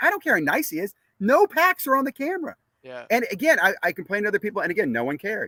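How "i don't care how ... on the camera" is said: mock yelling, raised and pitched-up. Speaker retells arguing with his son about a card break, retelling yelling at him. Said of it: "I'm yelling at my son".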